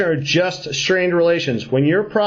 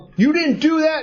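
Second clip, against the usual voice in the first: screaming, higher pitch; 9 semitones higher than usual. Retelling being in the trading pit: imitating own past screaming. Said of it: "I'd be screaming at you".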